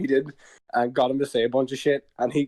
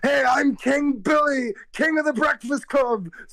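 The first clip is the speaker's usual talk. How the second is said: put-on booming shout, pitched way up; 13 semitones higher than usual. Retelling a shout-out during a live stream: imitating Billy shouting loudly. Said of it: "shouted out so loudly".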